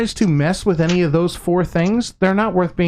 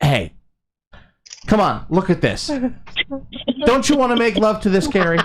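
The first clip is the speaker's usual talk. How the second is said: play-acted, insistent, nagging, pushy pestering tone; 2 semitones higher than usual. Acting out always hounding a partner to make love: mock hounding for sex. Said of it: "so I'm always hounding you to make love".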